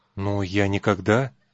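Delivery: muttering. A boy answers the sergeant, muttering. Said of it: "пробормотал мальчик".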